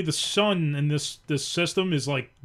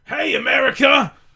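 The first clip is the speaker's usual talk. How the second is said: loud, high scream straight into the microphone; 8 semitones higher, 5 dB louder than usual. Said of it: "Anytime you don't have to scream into it".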